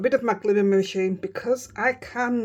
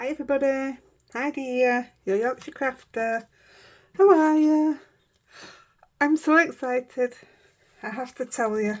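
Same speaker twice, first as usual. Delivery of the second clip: audible smile throughout the words; 3 semitones higher than usual. A crafter greeting everybody, super excited, smiling voice. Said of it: "hear the smile in my voice".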